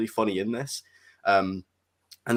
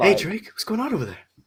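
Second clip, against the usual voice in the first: put-on Boston-American accent with higher pitch; 10 semitones higher than usual. Imitating a film character's lines after talk of the actor: Mark Wahlberg impression. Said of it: "I wasn't even gonna attempt that accent".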